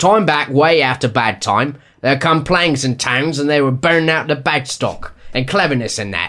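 loose, informal London Cockney accent. Reading the line again after being told it was too formal, in a Cockney accent. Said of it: "So you want Cockney?".

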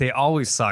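ordinary talk, nothing marked

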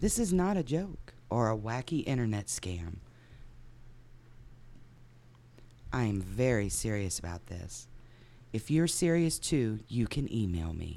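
put-on sultry voice, low, soft and sexy. Reading a personal ad aloud on request, in a mock sexy voice. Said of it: "You want to read it sexy?".

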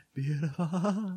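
"beautiful" said high, trailing off at the end. Repeating how the word beautiful was said earlier: imitating own trailing off. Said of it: "I trailed off in beautiful".

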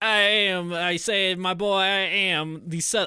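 failed fake Southern accent. Mimic a British man trying to sell himself as Southern, in a failed Southern gentleman accent. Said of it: "I can't do this".

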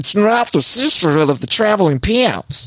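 put-on high-pitched, mushy New York accent, sticky words. Imitating Gina with a thick New York accent. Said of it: "the New York accent and like she's got peanut butter in her mouth".

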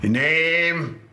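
put-on Geordie accent with a name drawn out. Retelling a prison officer at a desk asking his name, Geordie accent. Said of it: "In his Geordie voice".

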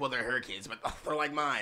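mock overjoyed, all-sunshine super happy voice. Imitating the creepy non-Joker Joker talking about the kids: imitating Joker being super happy. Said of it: "super happy".

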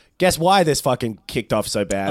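ordinary delivery

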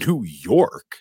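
mock American accent, loud. Retelling a scene where Hans answers the cop McClane: Hans's forced American accent. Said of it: "with this forced American accent".

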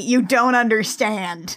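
ordinary delivery

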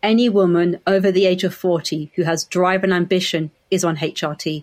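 ordinary talk

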